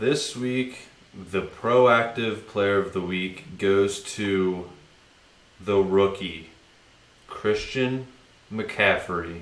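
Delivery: drawn-out, measured, very slow, deliberate announcer delivery. A host announces the player of the week award on the show, talking really slow. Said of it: "I feel like you're talking really slow all of a sudden".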